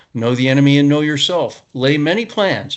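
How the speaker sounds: ordinary talk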